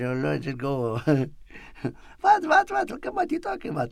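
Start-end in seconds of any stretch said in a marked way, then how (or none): 2.2-3.9 put-on high, fast Armenian accent. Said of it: "you got the Armenian accent".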